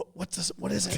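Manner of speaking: hushed, breathy, barely voiced whisper. Retelling getting an inside stock tip, the speaker asks what it is, whispering. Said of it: "Like I'm whispering".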